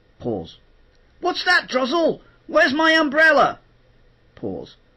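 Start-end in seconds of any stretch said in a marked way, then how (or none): 1.2-3.6 animated cartoon character voice, higher and louder. Showing how lines are recorded alone in the sound booth: Smelly cartoon voice. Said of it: "So you do things like this. You go".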